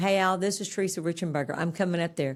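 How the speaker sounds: ordinary talk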